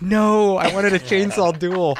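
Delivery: acted-out high, stretched-out, drawn-out yell. Retelling a reaction while watching a movie: imitating own yell. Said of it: "I I yelled".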